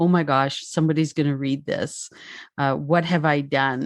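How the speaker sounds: frightened voice. Retelling own thoughts after a book was accepted: imitating own past terror. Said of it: "just the sheer terror of".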